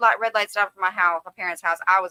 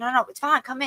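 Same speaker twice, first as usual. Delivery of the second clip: mock, insistent, pitched-up begging and coaxing; 6 semitones higher than usual. Retelling a date who will not take her home: imitating someone begging. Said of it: "He's begging me".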